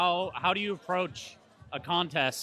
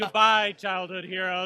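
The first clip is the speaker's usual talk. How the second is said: acted, louder, excited fanboy geeking out; 3 semitones higher, 4 dB louder than usual. Recalling saying goodbye to childhood heroes: retelling an excited goodbye. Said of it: "I was just geeking out".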